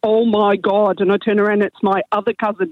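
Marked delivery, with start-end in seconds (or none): 0.0-1.0 put-on Derry accent. Retelling a cousin from Northern Ireland calling out from the toilet, thick Derry accent. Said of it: "in a really thick Derry accent".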